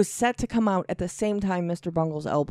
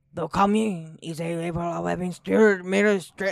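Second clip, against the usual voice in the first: put-on French accent. Asked by the co-host to read a sentence aloud, in a French accent. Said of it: "Read it in a French accent".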